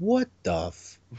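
deer voice, cut off mid-word. Describing a comic panel and voicing the deer: voicing the deer. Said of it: "like the deer's going".

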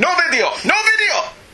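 very high, put-on Italian accent. Retelling a guard grabbing at his camera, shouting: italian guard accent impression. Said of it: "Was that a good impression?".

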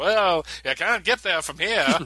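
homespun, folksy small-town voice. Discussing a comic issue with co-hosts, voicing people from Smallville: Smallville townsfolk voice. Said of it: "That's the voice I always do when I'm talking about people in Smallville".

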